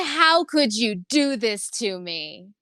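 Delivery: slow, loud, upset, bewildered, wounded pleading. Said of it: "he's so upset".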